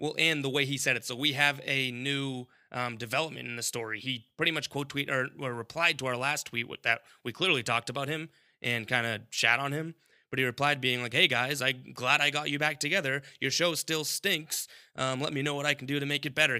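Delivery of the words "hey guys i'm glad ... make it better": put-on sarcastic tone. Reading out a listener's reply tweet, imitating it sarcastically. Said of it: "kinda sarcastically".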